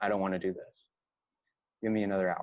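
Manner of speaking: soft, gentle voice. Retelling what he said back when woken a second time: retelling a gentle reply. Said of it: "I equally gently just said back to him".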